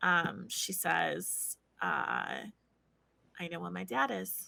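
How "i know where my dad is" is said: soft, quiet, hushed and guarded voice. Character speaking after closing the door, in case anyone overhears: quiet voice. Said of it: "she still says in like a pretty quiet voice".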